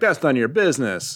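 normal talking voice

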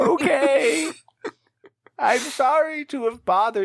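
very high put-on old character voice. In a role-play game, the speaker answers in character, in the usual put-on character voice. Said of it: "I defaulted into that old voice again".

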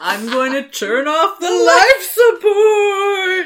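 booming spooky menace in a squeak, stretched out. Playing the thing that took over the main speaker to threaten everyone, mock-menacing Piglet voice. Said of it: "it's very much Haunted House".

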